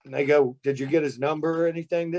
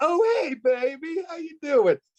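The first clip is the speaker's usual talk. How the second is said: voice flips very high, sweet and friendly; 13 semitones higher than usual. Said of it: "And the voice changed".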